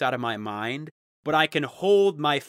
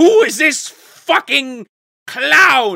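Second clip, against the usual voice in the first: very high, loud, slow, drawn-out, shrill mad king yell; 12 semitones higher, 11 dB louder than usual. Acting out the king asking for another clown: imitating a mad king. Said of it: "And he's just like".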